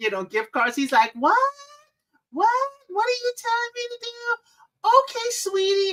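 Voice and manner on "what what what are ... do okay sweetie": put-on squeaky, very high little old lady voice. Retelling how a scam-baiter fools scammers: imitating his little old lady voice. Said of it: "he even pretends to be a little old lady. He changes his voice".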